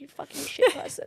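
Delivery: put-on scolding tone. Retelling scolding herself at bedtime for shouting at her child: imitating berating herself. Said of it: "I'm literally cussing myself".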